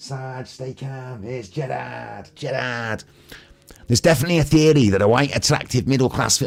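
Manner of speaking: put-on funny Manchester accent. Reading out a written comment aloud: funny manchester accent. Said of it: "Went a bit Manchester".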